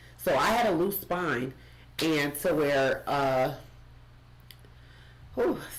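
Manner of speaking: slow, choked-up, halting words, getting emotional, breaking off. Answering how the spine diagnosis made you feel, getting emotional. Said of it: "I just get emotional thinking about it".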